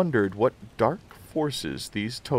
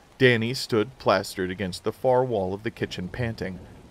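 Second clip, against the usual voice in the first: ordinary delivery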